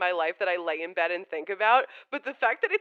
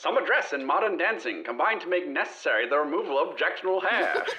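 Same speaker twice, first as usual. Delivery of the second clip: put-on old-fashioned 1915 advertisement announcer voice; 4 semitones lower than usual. Going first when asked to do a best 1915 advert voice. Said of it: "do your best nineteen fifteen advert voice".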